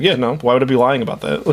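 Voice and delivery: flat, expressionless delivery. Retelling a guest's answer about a strange story: imitating a deadpan reply.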